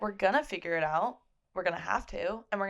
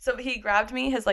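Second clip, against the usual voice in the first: ordinary talk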